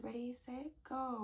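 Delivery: put-on tiny, high little baby voice. Retelling a small child's words from a card reading: imitating a baby's little voice. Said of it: "I was hearing my baby's little voice".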